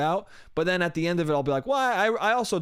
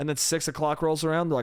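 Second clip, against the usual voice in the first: ordinary talk, nothing marked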